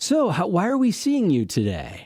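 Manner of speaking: put-on patronizing, condescending, sing-song doctor voice. Describing doctor visits, acting out a doctor entering the exam room: mock-condescending doctor. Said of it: "that's so condescending".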